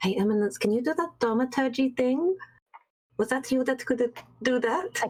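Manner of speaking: whisper. A game character leans in to ask a companion something in the ear, whispering. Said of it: "lean in and whisper in Eminence's ear".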